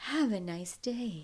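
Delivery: slow, soft, purring sexy computer voice. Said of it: "It's like a sexy computer voice".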